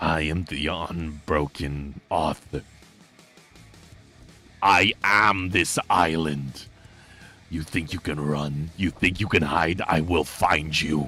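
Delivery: deep, slow, drawn-out, deliberate monster voice. Voicing a creature that calls after the player as the elevator door closes: voicing a creature. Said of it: "you hear the creature go".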